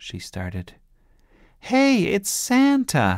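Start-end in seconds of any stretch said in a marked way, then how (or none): 1.6-3.2 shrill, very high, loud shouting. Sebastian sees someone coming through the garden gate and shouts. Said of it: "shouted Sebastian".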